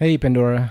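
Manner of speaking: depressed-sounding voice. Greeting a listener, which another speaker questions: depressed-sounding greeting. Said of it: "Why'd you say it like that?".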